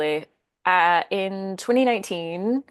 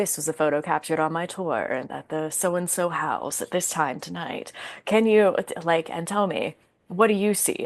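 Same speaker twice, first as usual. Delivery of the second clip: cool, collected, calm ghost-tour narrator voice. Speaker recalls narrating her short videos about a tour photo: put-on cool, calm voice. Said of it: "the cool, calm voice".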